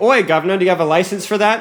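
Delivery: put-on, adopted British accent. Joking about what to say whenever the British invade: mock British accent. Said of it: "Whenever the British invade, just go".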